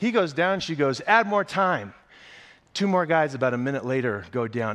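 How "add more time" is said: high, screamed drill-sergeant yell. Retelling what she screamed as each guy went down: retelling a screamed order. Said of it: "she's just screaming her head off".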